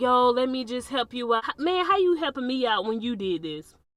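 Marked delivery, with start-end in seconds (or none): 0.0-1.4 mock begging and pleading. Retelling a caller's voicemails: imitating someone begging and pleading. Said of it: "he just begging and pleading".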